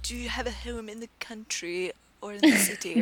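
put-on high, extremely posh, upper-class British accent. Retelling what a woman on a bus said, in an extremely posh british accent. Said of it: "talking in like an extremely posh British accent".

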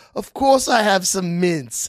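put-on high, slow British schoolboy accent, laid on thick. Retelling a TikTok skit by a nerdy kid: imitating a British kid from TikTok. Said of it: "he goes".

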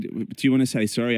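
ordinary talk, nothing marked

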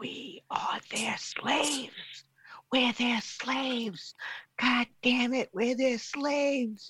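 shrill, very high yelling. Agreeing that pets treat their owners as slaves: yelling. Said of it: "You're yelling again".

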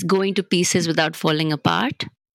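ordinary talk

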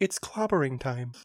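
kindly, mild, tender delivery with no menace. Quoting a superhero's catchphrase to the others: gentle delivery of the Thing's catchphrase. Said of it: "I love the gentleness you said it with".

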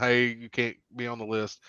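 ordinary delivery

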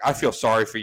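ordinary talk

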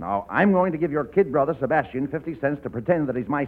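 ordinary delivery

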